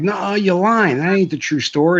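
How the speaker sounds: mock yelling, high and hollered. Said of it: "he starts yelling the true story".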